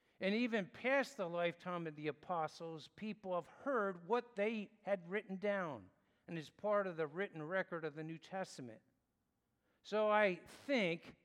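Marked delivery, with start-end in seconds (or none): 9.8-11.0 "I think" stressed, higher, louder and slow. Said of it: "I emphasize the word I think".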